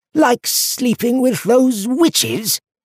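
very high, contemptuous, scornful sneer. Cutting off a man's excuses, the speaker sneers at him. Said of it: "Duskleaf sneered".

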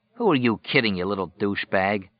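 ordinary delivery

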